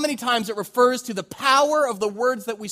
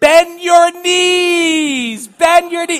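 put-on very slow, high, loud child heckling, "knees" stretched; 7 semitones higher, 9 dB louder than usual. Retelling how a six-year-old son heckled a batter: imitating a small boy taunting. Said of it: "he decides to go like this".

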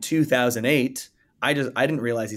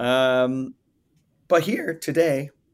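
little voice crack, breaking on the words; 2 semitones higher than usual. Host opening today's episode, speaking with a voice crack. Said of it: "little voice crack there".

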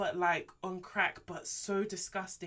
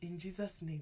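mock would-be seductive pillow talk voice, quieter; 7 dB quieter than usual. Retelling a man's prayer in the voice guys use for pillow talk: imitating a put-on pillow talk voice. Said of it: "it's that voice".

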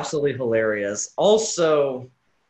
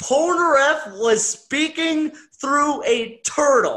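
very high, drawn-out, stifled laughter in the voice; 12 semitones higher than usual. Announcing the funniest body swap in the show: barely holding back laughter. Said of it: "I can't even keep a straight face while saying this".

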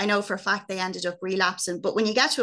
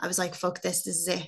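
normal talking voice

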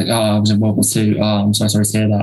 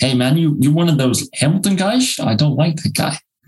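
terrible fake Dutch accent, pitched up; 6 semitones higher than usual. Imitating Dutch people who hear the speaker's accent, in a terrible Dutch accent. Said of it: "That's my Dutch".

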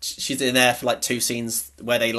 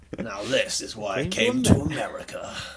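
put-on creepy delivery with swooping tone; 4 semitones higher than usual. Repeating their previous line, now in a mock-creepy tone. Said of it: "When you say it in that tone, it's a lot more creepy".

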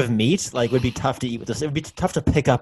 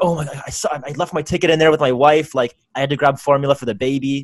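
ordinary talk, nothing marked

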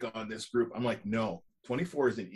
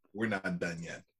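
put-on low voice with slight Bronx accent; 4 semitones lower, 3 dB quieter than usual. Repeating a line a man said on camera, with a slight Bronx accent. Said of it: "with a bit of a Bronx accent".

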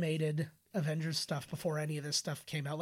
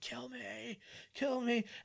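put-on high, drawn-out, agonized scream; 7 semitones higher, 3 dB quieter than usual. Describing a scene of a man rebuilt with alien DNA, imitating screaming in pain. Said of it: "it's him screaming".

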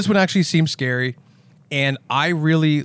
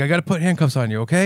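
play-acted scared, nervous, shaking and trembling voice; 3 semitones higher than usual. Retelling Danny Trejo putting handcuffs on the killer: imitating a shaking, scared Danny Trejo. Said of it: "And he's, like, shaking".

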